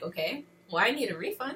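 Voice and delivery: ordinary talk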